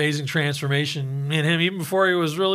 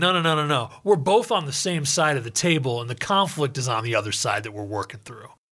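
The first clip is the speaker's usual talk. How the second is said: ordinary talk, nothing marked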